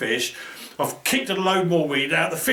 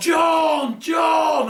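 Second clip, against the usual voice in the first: mock very high, stretched-out, drawn-out hollering; 12 semitones higher, 3 dB louder than usual. Retelling struggling with a heavy weight, calling across to John; retelling a shout. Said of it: "I'm shouting at him".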